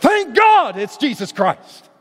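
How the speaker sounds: put-on high, slow, drawn-out, joyful, thrilled shout. Speaker reading Scripture acts out the writer of Romans: acting out a shout. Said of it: "almost like he shouts out".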